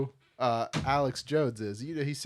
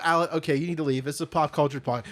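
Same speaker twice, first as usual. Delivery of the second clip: ordinary talk, nothing marked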